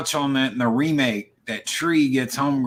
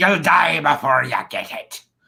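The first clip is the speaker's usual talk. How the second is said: put-on pirate accent; 2 semitones higher, 3 dB louder than usual. Repeating the Evil Dead line to show the odd accent: Ash with a pirate accent. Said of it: "I'm a pirate now. Arg".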